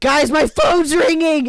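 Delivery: slow, high-pitched yelling.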